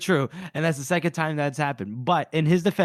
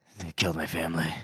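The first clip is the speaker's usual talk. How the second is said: put-on edgelord voice, lower in pitch and quieter; 11 semitones lower, 7 dB quieter than usual. Retelling what Logan says to Pharaoh in the cavern: edgelord Logan voice. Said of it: "proper, like, edgelord".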